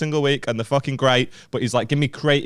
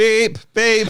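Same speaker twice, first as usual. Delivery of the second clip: polite horn beeps, much higher and louder; 10 semitones higher, 5 dB louder than usual. Teasing the other speaker about a sound they made, doing a polite lorry horn beep. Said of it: "You sounded like a very polite fucking H G V".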